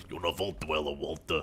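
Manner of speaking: goofy voice, very deep, soft and hushed. Listing Bethesda games, the speaker suddenly slips into a put-on voice. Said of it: "Don't know why I'm doing that voice".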